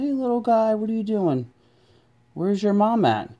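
very high, gentle, friendly sing-song coo. Voicing a toy adventurer talking to a lone baby bear: being nice to a baby bear. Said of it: "he's trying to be all nice to the baby bear".

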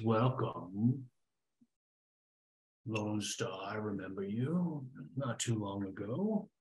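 menacing monster creature voice. Voicing a creature greeting the player: Elder Brain voice. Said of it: "As the Elder Brain voice?".

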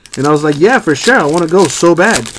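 ordinary talk

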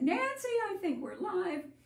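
high urgent yell. Recounting coming back to find the stream live and calling to an assistant: retelling a yell. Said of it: "I yelled at my assistant".

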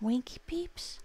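high, appalled, horrified whisper. Narrator reads Kitty's question to a wobbling bag: horrified whisper. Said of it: "Inquired Kitty in a horrified whisper".

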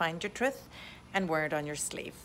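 plain

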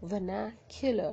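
"vernacular" stressed on na, r left silent. Comparing indian and british english pronunciation, stress on na in vernacular. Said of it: "R is silent, stress on the na".

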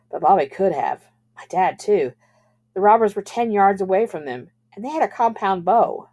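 plain

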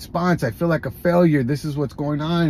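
ordinary talk, nothing marked

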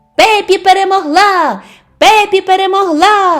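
high shouting from a crowd. The spectators call out after Pippi wins the match, shouting. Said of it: "закричали глядачі".

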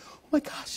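hushed, excited whisper, barely contained gasp.

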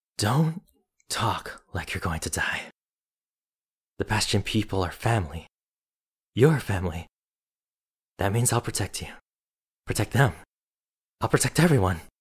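shaky, trembling, quivering, unsteady voice. Narrator reads a sister's words as she hugs her young brother: shaky hush. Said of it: "his sister's voice spoke in a shaky hush".

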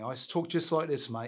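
put-on London Cockney accent. Retelling how he answered kids who mocked him: cockney accent. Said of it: "I even had a Cockney accent".

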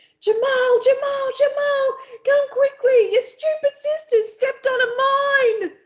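very high-pitched, frantic, panicked shouting. Reading a novel aloud, Yusuf calls Jamal to come: high-pitched panicked yelling. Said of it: "His voice is high-pitched with panic".

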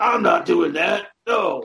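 slow, gruff, growly dog character voice. Describing a radio character someone played: imitating Earth Dog's gruff dog voice. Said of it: "playing this character who talks like".

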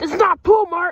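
shouting. Complaining to a teammate that the pool is missing: yelling. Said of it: "stop yelling at me, guys".

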